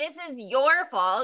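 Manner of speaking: mad, angry, accusing and blaming tone. Retelling what he says whenever he's mad at her: imitating him being mad. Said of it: "whenever he's mad at her".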